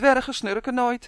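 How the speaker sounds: offended, indignant. A dwarf replies to teasing, indignant. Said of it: "zei Marleen verontwaardigd".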